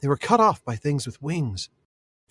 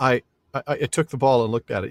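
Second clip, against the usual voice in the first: halting, stuttering, stumbling delivery; 3 dB louder than usual. Retelling a character's admission after he screwed up, stammering. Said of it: "the stammering alone".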